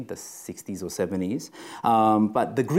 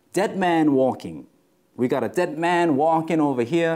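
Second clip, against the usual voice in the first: put-on high hollering Southern American accent; 6 semitones higher than usual. Retelling a prison story, the speaker quotes the guard in an old Southern American accent. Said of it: "It's kind of an old Southern American accent thing".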